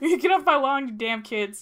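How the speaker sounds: put-on high, loud, grumpy old man voice. Friends joke about Whitebeard answering a messenger; mock-grumpy old Whitebeard. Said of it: "just the grumpy old man".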